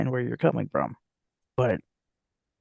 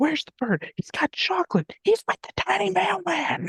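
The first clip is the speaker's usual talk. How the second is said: very high, evil-sounding dog voice. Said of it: "the evil dogs in that movie refer to Russell as".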